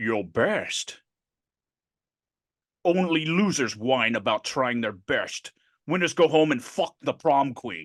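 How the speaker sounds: put-on Scottish accent in a movie-actor style. Acting out a scene from The Rock for a friend: Sean Connery impression. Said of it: "talking to Sean Connery".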